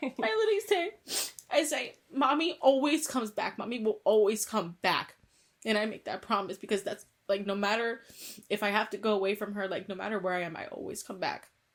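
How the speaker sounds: tearful, choked-up voice, close to tears, breaking. A mother recalling the promise she always makes, close to tears. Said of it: "I'm sorry".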